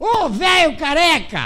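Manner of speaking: loud, drawn-out yelling.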